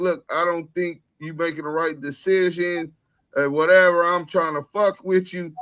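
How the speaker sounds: ordinary talk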